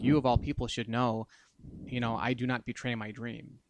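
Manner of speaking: put-on flat tone. Retelling a comic scene, Griffith answers the furious Guts: imitating Griffith, emotionless. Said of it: "looks down at him with like no emotion".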